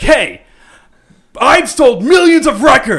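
put-on furious, very high, very loud yell. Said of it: "he turns around and he's pissed at me".

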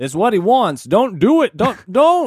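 very high, loud put-on voice, done badly. Quoting a movie scene for the others: Morgan Freeman impression. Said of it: "Is that your Morgan?".

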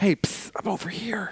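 hushed, secretive, breathy whisper. Acting out a figure hiding behind a corner: imitating someone whispering. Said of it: "Jesus did not whisper".

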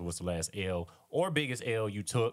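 normal talking voice

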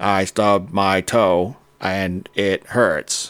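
flat, very slow, computer-generated speech. Showing what a computer-generated voice sounds like: Stephen Hawking computer voice. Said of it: "Think like Stephen Hawking's computer-generated voice".

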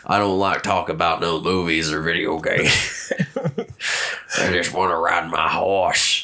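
put-on, exaggerated, deep masculine voice. Told their voice just got deep, playing along: put-on deep masculine voice. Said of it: "my voice is all deep".

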